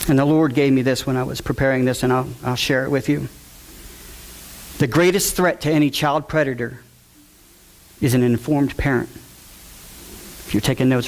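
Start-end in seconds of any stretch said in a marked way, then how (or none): 4.8-9.1 word greatest given heavy stress. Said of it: "write that down".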